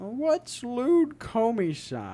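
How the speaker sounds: put-on sweet, high, slow grandma voice.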